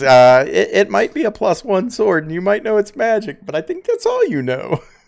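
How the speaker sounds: animated, high character voice with swooping tune. Voicing Mohara, who raises one eye at a player: Mohara character voice. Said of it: "he, he says".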